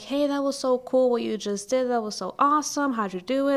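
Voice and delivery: friendly, admiring, encouraging, nice tone. Acting out the nice kid persona complimenting another kid: imitating a nice kid. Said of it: "Persona number one is gonna be the nice kid".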